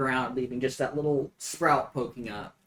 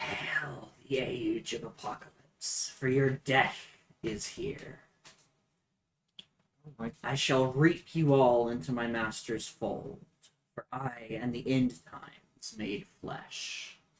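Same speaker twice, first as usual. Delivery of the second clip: slow, soft, rasping voice, every word drawn out; 6 dB quieter than usual. Describing the voice one hears, acting it out in a raspy voice. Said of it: "in this kind of raspy voice".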